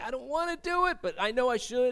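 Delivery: high, whiny, reluctant inner voice.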